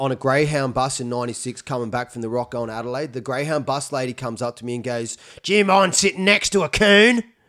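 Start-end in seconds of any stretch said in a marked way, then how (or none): 5.4-7.2 very loud, very high, shrill shout at top of voice. Retelling what the Greyhound bus lady asked them, retelling a top-of-voice shout. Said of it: "she said that at the top of her voice".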